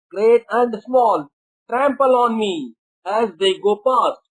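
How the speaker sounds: plain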